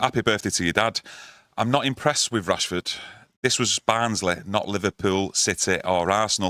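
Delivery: ordinary delivery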